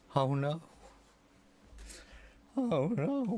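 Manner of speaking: voice cracking, high-pitched and very slow, dragged out. Reacting in dismay to someone's move: voice cracking. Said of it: "my voice is cracking".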